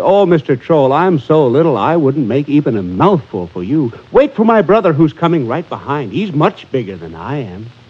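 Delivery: ordinary delivery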